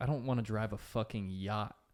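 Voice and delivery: ordinary talk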